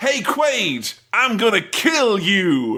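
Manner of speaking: put-on enthusiastic, high, swooping, drawn-out voice. Quoting a film villain with a drill: enthusiastic Benny impression. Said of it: "He's very enthusiastic about killing him".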